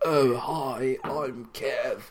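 hammed-up, exaggerated British accent. Mocking how Americans do his voice, mimicking an American imitating him. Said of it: "most Americans doing my voice is just like".

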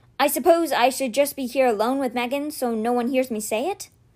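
ordinary delivery, nothing marked

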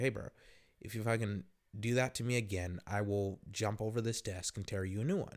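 calm, cold, quiet and composed tone. Retelling threatening to jump over a desk at a guy: reenacted calm, cold threat. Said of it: "I said it calm and I said it coldly".

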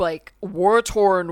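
slow, loud, grim tone, each word drawn out.

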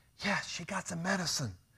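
soft hushed voice.

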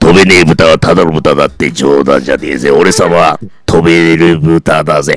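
put-on gruff pig pilot voice. Doing an impression from a named film, listeners call it close. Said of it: "紅の豚。".

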